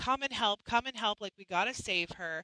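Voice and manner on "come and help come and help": usual speaking voice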